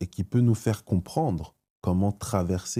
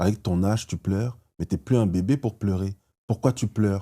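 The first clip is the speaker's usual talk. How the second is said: ordinary talk, nothing marked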